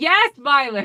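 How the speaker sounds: loud, high-pitched yelling. Retelling how a group answered an order from violet, imitating people yelling. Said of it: "And they're still yelling".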